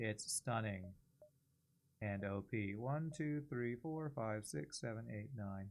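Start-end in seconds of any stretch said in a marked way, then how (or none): 0.0-2.7 mock dry monotone, lower, quieter, slower, deadpan. Saying other people's lines for them, imitating a dry monotone. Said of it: "A very dry, monotone voice".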